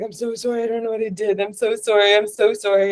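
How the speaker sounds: earnest, apologetic tone, sorry again and again. Retelling apologizing to an upset lady who yelled at her, acting out apologizing. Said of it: "And I was like apologizing".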